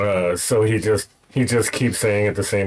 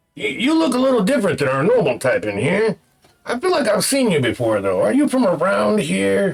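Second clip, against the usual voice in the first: very high, swooping, sing-song character voice; 10 semitones higher than usual. Game master voicing Jernit greeting Malchus: Jernit character voice. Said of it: "he kinda turns to you, uh, Malchus, and is like".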